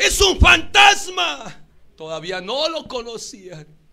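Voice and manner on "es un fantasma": very loud, rough, raspy, high-pitched shout. Telling how one of them saw the Lord approach in the storm, retelling a shout. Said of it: "uno de ellos gritó".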